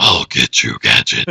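breathy, whispered cartoon villain voice. Comparing a movie killer to a cartoon foe: Doctor Claw voice. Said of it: "It's like Doctor Claw".

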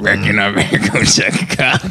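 low-pitched character voice.

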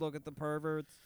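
ordinary delivery

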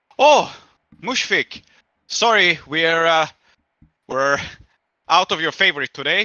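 high-pitched, loud, fussy woman's voice. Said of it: "she says".

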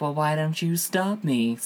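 play-acted, sultry, seductive, sexy delivery. Retelling what she said to him when he tried to stop her: imitating a sexy voice. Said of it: "Sexy voice".

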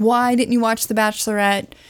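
ordinary delivery

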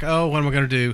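ordinary talk, nothing marked

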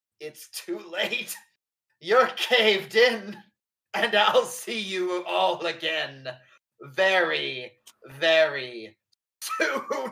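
very drawn-out dying voice. Telling a story, the speaker gives a dying man's last words in Larkin's dying voice. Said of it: "as Larkin is dying, he just goes".

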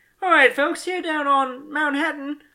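sounding Australian. Starting a pretend news radio scene again, in an Australian accent. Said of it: "Why are you Australian?".

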